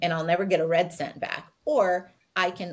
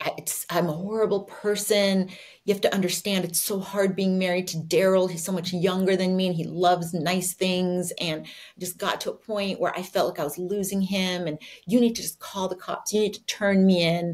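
plain

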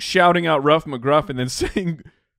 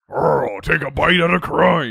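super gravelly, rough, ground-out delivery. Answering whether that was the dog's voice: super gravelly McGruff voice. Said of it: "he was super gravelly".

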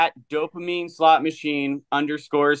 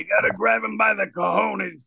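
rough, high-pitched put-on voice; 5 semitones higher than usual. Doing an impression for the others: Joey Diaz impression. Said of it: "is that Joey Diaz?".

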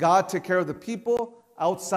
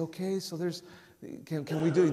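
put-on soft voice, quieter; 6 dB quieter than usual. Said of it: "he didn't say softly".

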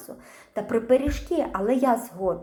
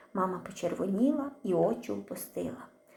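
ordinary delivery, nothing marked

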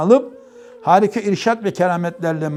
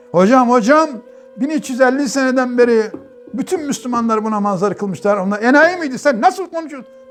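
high, booming put-on yell; 5 semitones higher than usual. Recounting shouting at the hoca before five hundred older men, retelling a booming shout. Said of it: "böyle bir bağırdım gülle gibi".

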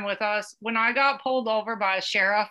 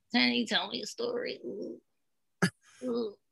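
put-on sickly worm voice with groaning "ughs"; 7 dB quieter than usual. Showing how they sounded when sick, like a worm: put-on sick worm voice. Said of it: "I sounded like a worm".

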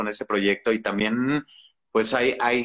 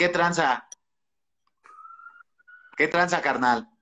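high, swooping voice, pitch swinging up and down; 7 semitones higher than usual. Asked to greet Osvaldo in Brandon's voice: Brandon's voice. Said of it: "Que lo saludes con voz de Brandon".

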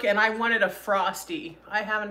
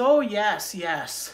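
put-on unplaced foreign accent, Indian or Spanish. Retelling a drive-thru worker's reply: imitating a worker's accent. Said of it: "he had, like, an accent".

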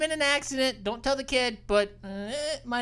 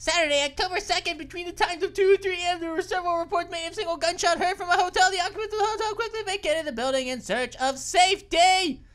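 rushed reading at breakneck speed, pitched up; 7 semitones higher than usual. Gaming channel host reading a report before it goes away, reading really fast. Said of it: "I was having to read that really fast".

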